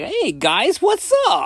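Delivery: very high, swooping, sing-song, slow drawn-out voice. Retelling own first podcast episode opening: imitating own past high-pitched voice. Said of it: "I had a high-pitched voice".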